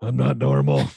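put-on under-breath grunt. Retelling a film scene, Ben Affleck replying, imitating him grunting under his breath. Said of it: "grunting under his breath".

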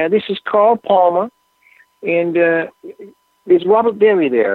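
very high voice. Speaker retells someone introducing themselves, imitating a very high voice. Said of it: "a very high voice saying".

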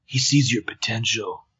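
low, hushed, quiet sensitive bro voice. Playing a character in a scene, in a low, quiet sensitive bro voice. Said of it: "dropped to like a really super low, quiet, like ultimate sensitive bro voice".

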